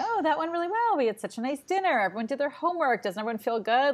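cheerful, high-pitched, upbeat, approving tone.

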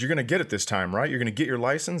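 acted-out, fast, playful, jokey teasing goofing-around voice. Speaker retells a man joking with the driver before a license test: imitating someone goofing around. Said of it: "he's like totally goofing around".

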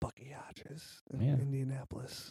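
hushed whisper, barely audible. On a podcast, speaking to a co-host, whispering. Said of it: "Why am I whispering?".

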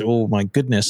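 ordinary talk, nothing marked

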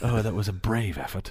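put-on whispered British accent, hushed commentator voice. Mocking radio golf commentators describing a putt: whispered British accent golf commentary. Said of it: "you have to do it with the accent".

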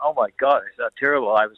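normal talking voice

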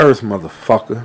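angry-sounding voice. Signing off the radio show, the host finishes the outro: angry. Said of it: "You say that shit so fucking angry".

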